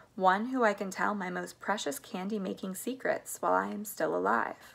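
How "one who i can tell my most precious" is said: usual speaking voice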